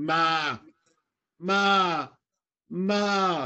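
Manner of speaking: badly done, high, drawn-out seal pup calls. Showing how a harbor seal pup calls for its mother, a bad imitation. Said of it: "I'll try to do a really bad imitation".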